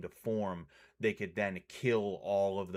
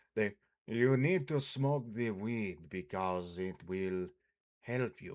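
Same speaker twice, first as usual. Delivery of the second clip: clumsy, bad, fake put-on Russian accent. Acting out a russian hippie, in a bad put-on russian accent. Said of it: "I was gonna try and do Russian hippie. ... That's not really a good Russian accent".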